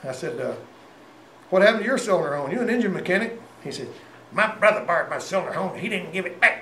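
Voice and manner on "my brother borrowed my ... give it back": put-on hillbilly accent, country bumpkin voice. Quoting another mechanic's reply to his question, in a hillbilly voice. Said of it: "he talked like a hillbilly".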